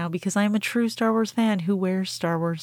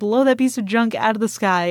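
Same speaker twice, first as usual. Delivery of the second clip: ordinary delivery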